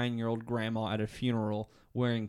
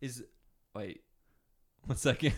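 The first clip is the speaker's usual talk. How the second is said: fighting off a laugh mid-sentence. Questioning another speaker's pronunciation of a word: holding back laughter. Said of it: "I'm trying not to laugh".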